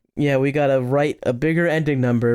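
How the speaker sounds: ordinary talk, nothing marked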